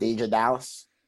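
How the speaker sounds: Pittsburgh Yinzer accent. Asked to say a name in your best Yinzer accent. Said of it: "in your best Yinzer accent".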